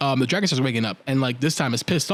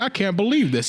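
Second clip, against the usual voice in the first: mock dumbfounded disbelief, higher; 6 semitones higher than usual. Retelling how everybody reacted after the orb breaks: imitating dumbfounded disbelief.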